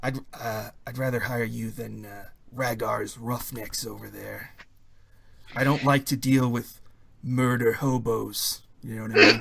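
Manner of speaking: hushed whispering voice. Game master voices a character making a private request to the players, whispering. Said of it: "He whispers to you".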